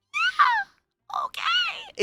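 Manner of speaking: put-on tiny, super high little-kid toddler voice. Describing a friend's two-year-old learning English, imitating his super high voice. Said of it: "in this super high voice".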